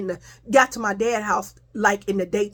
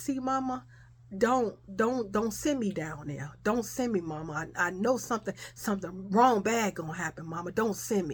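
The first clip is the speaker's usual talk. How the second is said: put-on crying, pleading tone, much quieter; 8 dB quieter than usual. Retelling a talk with their mama, imitating crying and pleading. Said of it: "stop crying".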